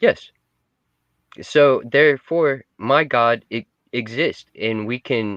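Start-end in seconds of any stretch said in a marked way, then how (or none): none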